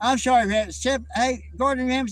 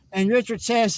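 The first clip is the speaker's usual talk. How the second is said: normal talking voice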